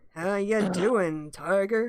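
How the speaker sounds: slow southern cowboy voice. Player practicing a character voice, greeting Tiger in a John Wayne voice. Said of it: "little southern kind of a uh, slow, confident".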